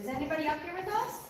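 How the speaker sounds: high, carrying call-out voice.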